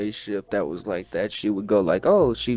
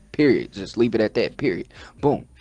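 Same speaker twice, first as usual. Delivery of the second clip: plain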